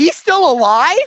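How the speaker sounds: mock very high, loud, blurted-out yell. Recounting yelling out when someone suddenly reappeared in a movie, retelling a yell. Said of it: "I just yelled out".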